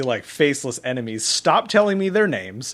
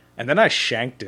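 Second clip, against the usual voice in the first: plain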